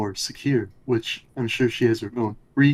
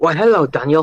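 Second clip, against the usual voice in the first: bad put-on British accent, higher and louder; 5 semitones higher, 7 dB louder than usual. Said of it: "can you do a [name] voice".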